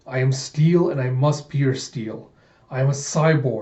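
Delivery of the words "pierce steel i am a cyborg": ordinary talk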